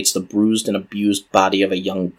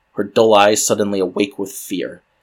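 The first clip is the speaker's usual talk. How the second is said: ordinary delivery, nothing marked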